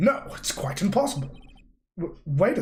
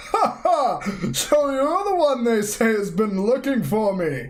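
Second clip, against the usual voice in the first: put-on loud, pitched-up, jolly old man voice with chuckles; 6 semitones higher, 5 dB louder than usual. Voicing a character because someone asked, in a jolly old man voice. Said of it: "make him talk like a jolly old man".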